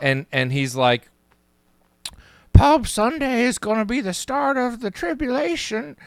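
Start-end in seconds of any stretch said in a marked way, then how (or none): 2.5-5.9 very high-pitched cartoon old-man voice. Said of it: "he's always talking like this".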